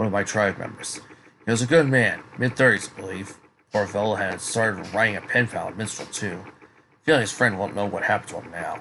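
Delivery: ordinary delivery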